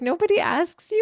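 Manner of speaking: amused, giggly delivery. Retelling a guest's surprised question, imitating someone giggling. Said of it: "she was kind of giggling".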